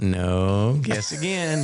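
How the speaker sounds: put-on child voice putting on an older voice. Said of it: "trying to think you're sounding like an older person".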